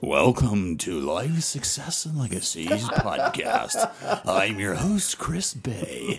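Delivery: swooping radio announcer voice. Speaker redoes the podcast opening alongside the host, in a radio voice. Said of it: "get my radio voice out".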